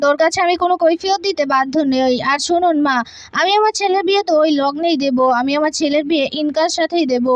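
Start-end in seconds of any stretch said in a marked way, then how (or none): none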